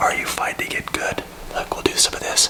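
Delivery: soft, hushed, whispered ASMR voice. Speaker trying out an ASMR voice for listeners, in an ASMR voice. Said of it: "This is my A S M R voice".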